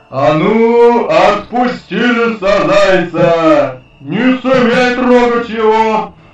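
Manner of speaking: gruff bear voice. In a fox tale, the bear confronts the frightened fox at her den, gruff bear voice. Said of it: "медведь грубым голосом говорит".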